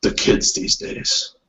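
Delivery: voice dropped to a confiding hush. Playing a character who looks around, then speaks in a lowered voice. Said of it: "sort of like lowers his voice".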